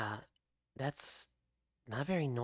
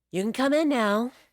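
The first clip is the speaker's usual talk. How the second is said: very high, very loud female voice; 10 semitones higher, 12 dB louder than usual. Game master voicing a character who calls a player back into the room: Krista's female voice. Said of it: "do your best female voice".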